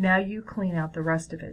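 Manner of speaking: plain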